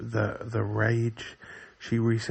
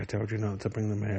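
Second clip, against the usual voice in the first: ordinary talk, nothing marked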